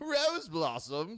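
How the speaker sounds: laughing through it, very high pitch. Reading a story aloud, a voice calls out breaking the silence: laughing while speaking. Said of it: "a voice laughs".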